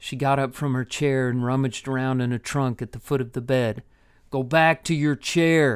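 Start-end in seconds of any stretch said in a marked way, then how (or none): 4.3-5.8 growled, growling voice. Narrated scene: a man speaks to a woman rummaging in a trunk, growled. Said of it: "Olin growled".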